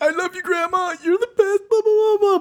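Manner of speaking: put-on very high-pitched bawling, blubbering through tears. Retelling a movie scene where the son toasts grandma at the wedding: imitating someone bawling. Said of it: "bawling and crying and is like".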